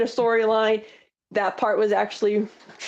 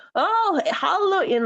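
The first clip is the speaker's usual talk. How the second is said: put-on very high-pitched, thick Tennessee accent; 9 semitones higher than usual. Retelling Honky Tonk's reply to an interviewer, in Honky Tonk's really thick Tennessee accent. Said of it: "in that really thick like Tennessee accent of his".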